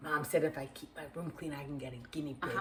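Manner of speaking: hushed, very soft, barely audible half-whisper. An aunt retelling what a child half-whispered to her before going home, retelling a child's half-whisper. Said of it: "Grant whispers to me".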